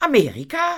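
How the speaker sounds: very high, loud, disbelieving, incredulous. Reading a woman asking back after a man's announcement, incredulous. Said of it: "fragte Madame ungläubig".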